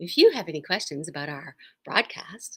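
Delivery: polite helpline-style telephone voice. Telling listeners who to call with questions about the broadcast, in a phone voice. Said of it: "it's my phone voice".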